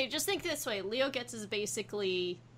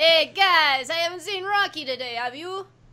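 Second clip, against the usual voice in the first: very loud, high, put-on Italian American accent; 7 semitones higher, 10 dB louder than usual. Asked to do their best American Italian accent, a player speaks in it. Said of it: "Do your best American Italian accent".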